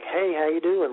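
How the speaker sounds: sarcastic, breezy, mock tongue-in-cheek tone. Retelling a helicopter pilot waving at them: imitating a sarcastic greeting. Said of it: "waving sarcastically".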